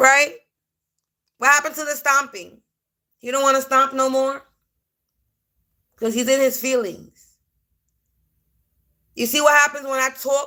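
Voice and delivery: loud confrontational rant.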